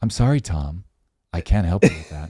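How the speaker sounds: low deep character voice. Recounting an AI chatbot refusing to help, in HAL voice. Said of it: "if you do that in Hal's voice".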